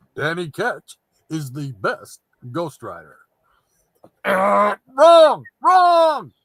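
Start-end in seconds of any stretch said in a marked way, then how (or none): 0.2-3.2 broadcast announcer-style delivery. Reading out a viewer's chat message: announcer voice. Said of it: "announcer's voice".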